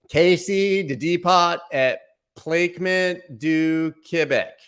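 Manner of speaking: very slow, loud Americanized French, American accent. Showing how an american says quebec french words: american accent on french. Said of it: "Here's how an American would say it".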